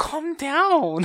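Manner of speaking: very high, shrill, loud woman's voice. Teasing the other speaker by imitating a lady from a video. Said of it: "You sounded like that lady from that one video".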